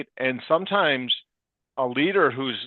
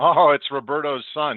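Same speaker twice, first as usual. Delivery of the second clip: mock sarcastic tone; 3 dB louder than usual. Retelling what direct reports said about a young intern: imitating sarcastic remark. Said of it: "using maybe a little bit of sarcasm".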